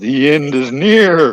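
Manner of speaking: put-on macho, manly announcer delivery. Asked to say the line in a deep manly voice. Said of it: "Could you say it in your deep manly voice".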